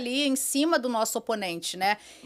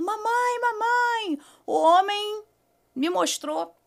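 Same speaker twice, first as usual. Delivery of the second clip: put-on, high, urgent child's shout; 9 semitones higher than usual. Retelling a child running up after an incident: imitating Manuela shouting. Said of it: "vem Manuela gritando".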